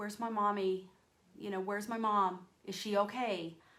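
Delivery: put-on tearful, pleading crying voice. Retelling asking a neighbor where her mom was: imitating own past crying. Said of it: "I was crying and I was like".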